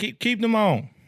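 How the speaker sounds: very high, loud yell. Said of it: "I'm yelling at my child".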